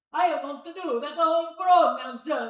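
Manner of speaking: very high, squeaky, cartoonish Italian accent. Streamer imagines how the character would react, doing a Mario impression. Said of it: "That was my best Mario impression".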